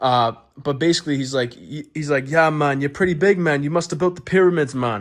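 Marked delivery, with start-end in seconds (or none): 2.3-5.0 clumsy, bad put-on Jamaican accent. Retelling what a man said: bad Jamaican accent. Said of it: "I know my Jamaican accent is bad".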